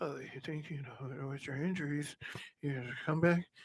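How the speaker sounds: meek, docile, very soft, barely audible half-whisper. Showing how the other speaker asks a player questions: imitating someone's docile half-whisper. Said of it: "Why are you whispering like we're at a movie?".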